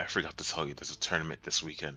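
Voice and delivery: hushed, half-whispered aside. Speaking in character to the party about a tournament: half-whispering in character. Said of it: "I'll whisper to all of you".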